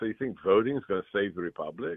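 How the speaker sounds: ordinary talk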